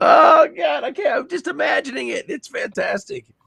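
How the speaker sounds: very high-pitched weeping, crying through the words. Asked how they're holding up, replying while crying while talking. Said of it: "I'm crying".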